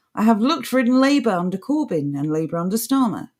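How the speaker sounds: normal talking voice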